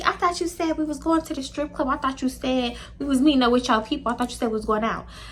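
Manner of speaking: soft, quiet, cutesy little cooing voice. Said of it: "Here go Nia talking to him all cutesy".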